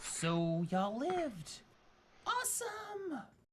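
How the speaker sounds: high, slow character voice. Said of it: "And they're just kind of like".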